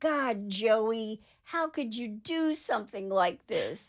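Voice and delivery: sobbing, tearful, crying through the words. Retelling what Jeff said to the police, imitating someone crying. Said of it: "he's crying and saying".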